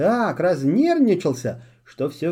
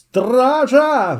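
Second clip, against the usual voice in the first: enraged, furious yell with Стража drawn out; 6 semitones higher, 5 dB louder than usual. Narrator voicing Askolda answering Filipp's claim; shouting in a rage. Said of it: "вне себя от бешенства закричала Аскольда".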